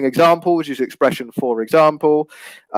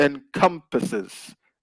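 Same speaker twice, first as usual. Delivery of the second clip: encompasses with stress on second syllable com; 7 dB quieter than usual. Teaching someone how to pronounce a word: stress on 'com' in encompasses. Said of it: "it's on the second syllable".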